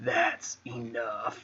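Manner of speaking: slow, flat, hushed monotone. Describing how a film character approaches people, doing a slow monotone Ricky impression. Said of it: "the way they talk is so slow and monotone".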